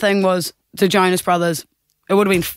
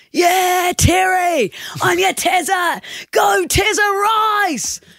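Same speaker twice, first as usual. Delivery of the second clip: put-on very high cheering yell, name stretched out; 12 semitones higher than usual. Retelling joining a crowd yelling out an NFL player's name, retelling a yell. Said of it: "everyone's like yelling out his name. So I start joining in".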